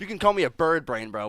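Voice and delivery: heated, worked-up rant. Speaker complains to an interviewer about the nickname Lizard Brain; getting mad. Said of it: "sorry, I'm getting mad".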